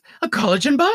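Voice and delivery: mocking imitation. Recapping a favorite TV scene, act out a character scoffing at an attendant, mocking imitation. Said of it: "she's faking a French accent".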